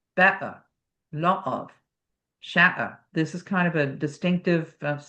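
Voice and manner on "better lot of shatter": Cockney glottal t in "better", "lot of", "shatter". Showing the glottal stop in the back of the throat: cockney glottal stops. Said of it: "distinctive, uh, sound for the Cockney dialect".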